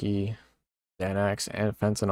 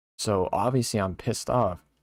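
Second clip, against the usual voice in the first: usual speaking voice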